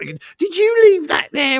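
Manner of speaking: very high, shrill, swooping, horrible dinner lady voice. Recalling school-lunch days and the women who mopped around them, imitating a horrible dinner lady. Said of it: "I love your impersonation of the women".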